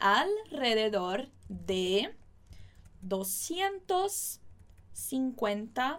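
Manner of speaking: slow, drawn-out dictation-style reading.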